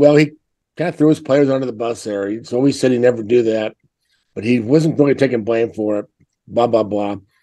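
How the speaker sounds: ordinary delivery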